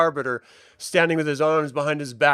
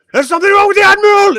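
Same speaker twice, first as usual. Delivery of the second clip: alarmed, shrill, loud, far-carrying, echoing scream; 10 dB louder than usual. Voicing someone in the halls raising the alarm: screaming. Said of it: "you just hear screaming down the halls".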